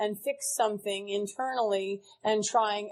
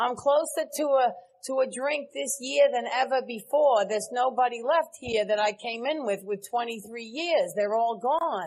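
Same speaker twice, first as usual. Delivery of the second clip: put-on New York accent; 2 semitones higher than usual.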